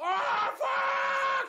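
imitated full-lung scream. Speaker recalls screaming a character's line, retelling a top-of-lungs scream. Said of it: "at the top of my lungs".

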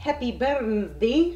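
bad put-on Scottish accent. Host opens a birthday greeting on the show in a terrible scottish accent. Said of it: "That's a terrible Scottish accent".

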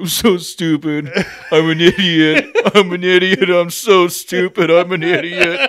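very slow, high, loud wailing through tears. Retelling how a man sat in his car: imitating someone crying. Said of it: "he just starts crying".

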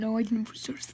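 soft, unvoiced whisper.

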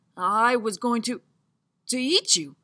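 shocked, dazed, slow, stunned voice. Answering the guest he almost ate, in shock. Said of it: "he replied in shock".

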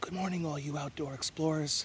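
hushed whisper. Greeting outdoor explorers early in the morning so the birds can be heard, whispering. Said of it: "I'm whispering".

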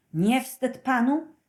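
huffing, indignant, angry, very loud. A detective rushes to the cellar and confronts another detective and workers, panting angrily. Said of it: "Zasapał gniewnie".

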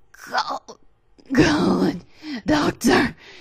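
gasped out in a gasp. Narrator reads a man doubled over, clawing at his stomach, speaking to the doctor, gasping. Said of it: "he gasped".

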